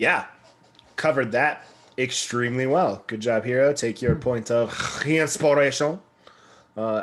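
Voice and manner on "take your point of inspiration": bad, cliché, put-on French accent. Between remarks recapping a game session, speaking in a stereotypical bad French accent. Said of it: "as the uh, stereotypical bad French accents would say".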